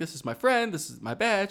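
very sweet, sugary voice. Retelling how Stabler talks to an eight-year-old girl: imitating Stabler talking very sweetly. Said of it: "talks to her very sweetly and is like".

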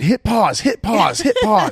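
very high, swooping, repeated shouted yell. Retelling yelling at family while getting up to do the dishes, retelling a yell. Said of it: "I'm like yelling".

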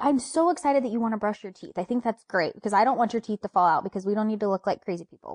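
ordinary delivery

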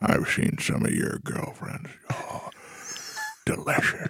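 whispered, hushed, breathy dad voice. Acting out his father speaking, the speaker is imitating his father's voice. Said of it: "This is my father's voice".

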